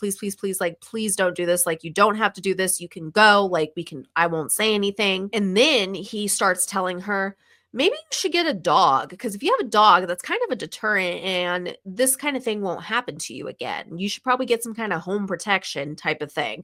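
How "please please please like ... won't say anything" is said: mock panicked, frantic pleading tone. Retelling how a woman begged her attacker to let her go: retelling a panicked plea. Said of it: "immediately went into a panic and is like".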